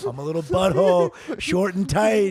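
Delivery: loud, goofy, silly made-up character voice. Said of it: "A voice I've never seen".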